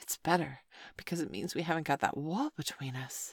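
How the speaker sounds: usual speaking voice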